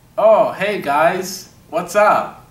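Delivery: put-on Ukrainian-accented speech. Starting the shoot, the actor plays Kyle in a Ukrainian accent. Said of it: "What was that accent that you just did?".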